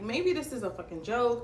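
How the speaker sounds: normal talking voice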